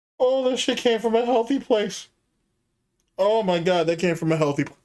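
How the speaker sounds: crying with laughter. Reacting to something funny while talking to chat: crying with laughter. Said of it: "I'm crying right now".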